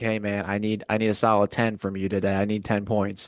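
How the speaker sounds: ordinary delivery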